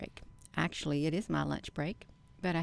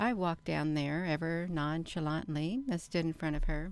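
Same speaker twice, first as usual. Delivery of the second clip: ordinary talk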